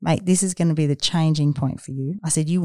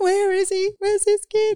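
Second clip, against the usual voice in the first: mock upset, near tears, very high pitched. Retelling ringing Jim from the hotel in tears: imitating own tearful words. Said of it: "I'm in tears and I'm going".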